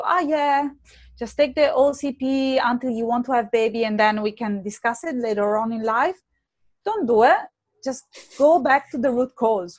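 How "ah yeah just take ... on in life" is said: ordinary delivery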